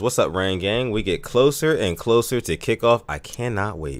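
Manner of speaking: normal talking voice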